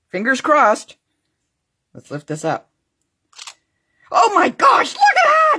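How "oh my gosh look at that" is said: thrilled, bursting excitement, very high, climbing pitch. Lifting up what was just pressed down and seeing how it turned out, excited. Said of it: "sorry, I'm just so excited".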